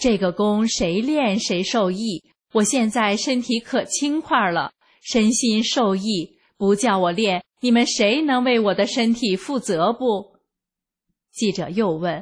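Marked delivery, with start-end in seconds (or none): none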